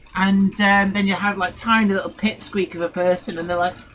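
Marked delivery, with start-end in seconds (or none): none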